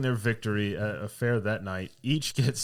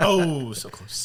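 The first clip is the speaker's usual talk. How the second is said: needling, taunting trash-talk tone in a higher voice; 6 semitones higher, 4 dB louder than usual. Retelling how Porter taunted the other team: imitating Porter trash-talking.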